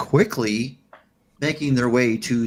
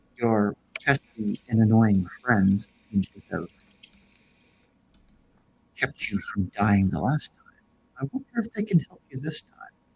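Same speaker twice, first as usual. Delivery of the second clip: put-on motherly character voice. Voicing the Mother, a voice in a player character's head. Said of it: "And why would that be, Mother?".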